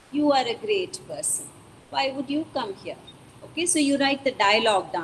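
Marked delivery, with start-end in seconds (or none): 0.1-2.9 openly sarcastic, mocking tone. Showing a variation of the line for students: sarcastic. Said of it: "So it is with sarcasm".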